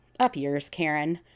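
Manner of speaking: normal talking voice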